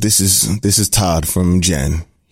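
put-on deep, late-night radio DJ voice. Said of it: "Deep Voice Danny".

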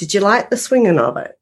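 put-on broad Australian accent. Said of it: "full-on Aussie accent".

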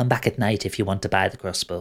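small kobold creature voice. Voicing a kobold grabbing a player's arm: kobold voice. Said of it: "grabs your arm, Capri, and goes".

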